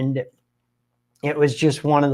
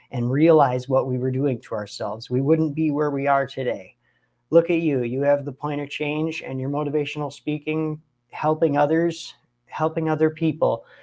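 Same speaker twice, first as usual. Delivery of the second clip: normal talking voice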